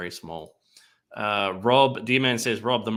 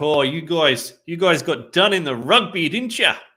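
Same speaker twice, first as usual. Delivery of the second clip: loud, high put-on New Zealand accent throughout; 7 semitones higher, 7 dB louder than usual. Recalling what people there said to Americans: New Zealand accent. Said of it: "was that a New Zealand accent?".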